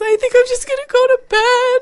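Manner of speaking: put-on very high, very loud sobbing wail. Retelling mom calming down after the show: imitating mom sobbing. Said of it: "crying, sobbing".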